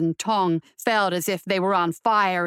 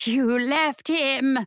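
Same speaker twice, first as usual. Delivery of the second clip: hissed, higher pitch; 6 semitones higher than usual. Reading a story, the narrator voices a female accusing a fleeing woman, hissing. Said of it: "the female hissed".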